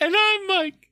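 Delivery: voice flipped up into very high falsetto. Introducing himself on the Greendale morning announcements, falsetto Mickey Mouse attempt. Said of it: "I don't know why I'm in falsetto".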